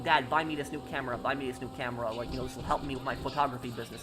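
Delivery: ordinary talk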